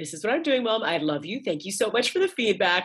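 detached, intellectual, at-arm's-length tone. Showing one way to answer their mom's questions: intellectual tone. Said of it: "I almost have that tone of voice".

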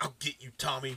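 quiet muttering under the breath. Retelling a beaten character's threat as he walks away: muttering to himself. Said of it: "muttering to himself".

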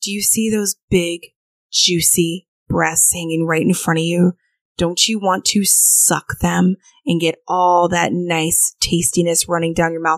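teasing, bedroom-style stage whisper. Retelling words whispered to a partner during role play: imitating a whisper. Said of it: "I'll whisper in his ear".

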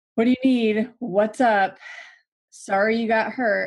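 faked, uninvolved sympathy in a detached, disengaged tone. Showing how a caregiver sounds when not engaged: mock disengaged tone. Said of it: "if I'm not actually in this with them".

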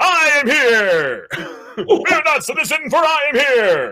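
heroic anime voice, pitched very high. Speaker shows off the impression that amazes their daughter; All Might impression. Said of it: "every time I do, All Might".

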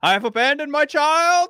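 mock tearful movie yell. Acting out a tearful movie scene, a picture of a son in hand: There Will Be Blood impression. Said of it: "and I tear up, and I look at you, Mike, and I go".

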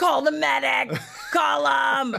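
very slow, dragged-out, high-pitched, rough screaming. Retelling a security lady's reaction when asked for a Band-Aid, imitating a screaming woman. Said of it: "And she's like screaming".

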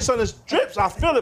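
ordinary talk

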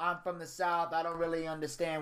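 plain

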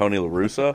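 ordinary delivery

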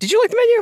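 voice goes very high. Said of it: "my voice went so high when I asked you that".

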